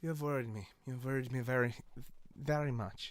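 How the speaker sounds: put-on French accent. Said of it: "When did Jazz get a French accent?".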